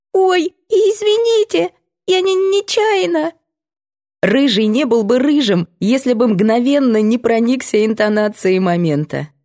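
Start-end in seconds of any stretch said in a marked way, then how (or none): 0.1-3.3 very high, frightened, timid little squeak. Right after a pistol clicks beside the narrator, a boy speaks in a frightened, timid squeak. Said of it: "мальчишка испуганно и робко пищит".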